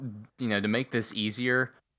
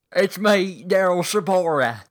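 put-on English accent, high, slow and drawn out; 9 semitones higher, 8 dB louder than usual. Playing a surprise guest who arrives late: Daryl Sabara with English accent. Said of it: "you were from the Queensland".

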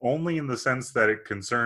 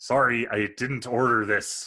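put-on Irish accent in a reading-aloud style. Asked by a co-host to read a bad movie review in an Irish accent. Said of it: "in Irish accent".

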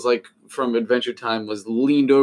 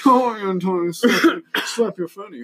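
mocking rich-person bro voice, higher; 9 semitones higher than usual. Joking about how rich people talk: imitating rich people's bro talk. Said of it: "that's how rich people do homosexual bro talk".

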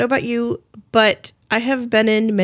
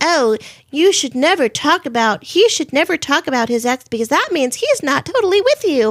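put-on young, annoying millennial girl voice; 3 semitones higher than usual. Mocking girls who say a man should never mention his ex, young annoying millennial voice. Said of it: "That's my young, annoying millennial voice".

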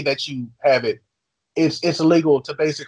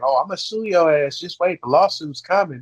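ordinary delivery

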